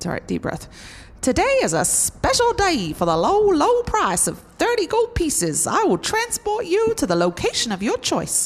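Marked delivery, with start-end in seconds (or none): 1.2-8.5 bad, over-the-top fake American accent, very high. Greeting customers at his stagecoach company, in a really bad American accent. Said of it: "Here comes a really bad American accent".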